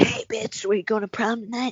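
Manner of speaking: voice tipping accidentally into cartoon character voice. Acting out the caller's line from the movie, sounding like Cartman. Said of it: "I sound like Cartman".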